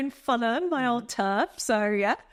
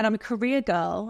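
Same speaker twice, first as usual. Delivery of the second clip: ordinary talk, nothing marked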